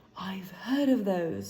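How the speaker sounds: hushed, awed words right after a gasp. Narrator reading Ron's line after he gasps at a parcel, hushed voice. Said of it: "he said in a hushed voice".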